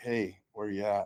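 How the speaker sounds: quiet, hushed, slow, creeping sneaking voice. Showing how you'd call for your wife with an intruder inside: quiet sneaking tone. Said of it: "sneak around the house and using that kind of tone of voice".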